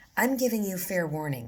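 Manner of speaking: steady, even, level delivery. Narrator reads Mother warning Phyllis, who is in bed; low, steady voice. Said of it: "Mother said in a low, steady voice".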